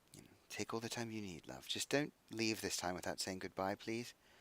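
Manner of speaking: fast, hushed, barely audible half-whisper. Voicing a mother at the table after breakfast: half-whispering. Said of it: "she just sort of whispers to you".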